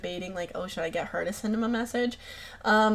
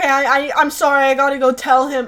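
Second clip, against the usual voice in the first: weepy, tearful, stumbling and stammering while crying; 5 semitones higher, 7 dB louder than usual. Retelling what was said back then: imitating own past crying.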